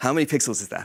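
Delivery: mocking, sarcastic echo. Repeating a question the asker just posed: sarcastic quoting of a question. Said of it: "Sorry to be sarcastic".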